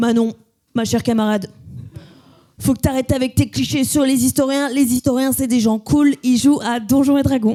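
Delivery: big heavy voice in a friendly lecturing manner. Quoting what the YouTuber told her, in Nota Bene's big voice. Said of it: "Il m'a dit comme ça avec sa grosse voix".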